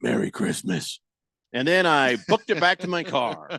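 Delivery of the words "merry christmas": soft, whispered caped superhero voice. Retelling a prank, repeat what you said over your shoulder to the camera in your best Batman voice. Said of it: "in my best Batman voice said".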